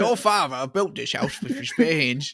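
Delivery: put-on Cockney accent. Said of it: "sounded a lot like Michael Caine".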